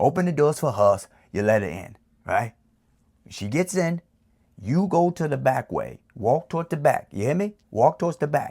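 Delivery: put-on New York accent. Advising the listener, the speaker switches into a New York accent. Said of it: "in my New York accent".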